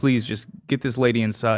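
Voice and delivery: plain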